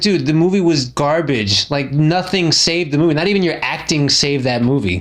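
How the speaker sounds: normal talking voice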